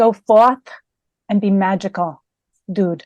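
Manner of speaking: put-on New England accent. Asked by the host to give the sign-off line, New England accent. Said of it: "is there like a New England accent?".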